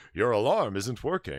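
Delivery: computerized machine voice like a talking alarm. Retelling what the smoke alarm announces: imitating a robotic voice. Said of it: "this robotic voice that comes on and says".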